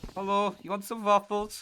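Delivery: pitch way up, put-on Dutch accent. Joking with a co-caster about Death: bad Dutch accent like Kermit the Frog. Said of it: "my Dutch did sound a bit just like Kermit the Frog".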